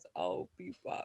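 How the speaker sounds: breathy, half-whispered one-liner delivery. Trying to say a famous movie line as well as possible: Terminator impression. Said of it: "I don't have that deep of a voice".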